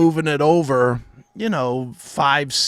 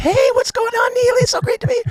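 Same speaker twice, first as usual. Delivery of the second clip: put-on very high, fast little-girl chatter. Mocking how both hosts sounded on old episodes, imitating own old little-girl voice. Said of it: "We sound like little girls doing the show back then".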